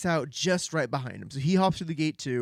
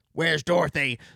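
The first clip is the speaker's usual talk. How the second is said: put-on voice as a dog; 3 dB louder than usual. Retelling a scene where Toto finds Julia Jam: Toto voice. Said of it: "is that your Toto voice?".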